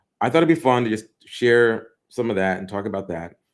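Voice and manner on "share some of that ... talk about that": ordinary talk, nothing marked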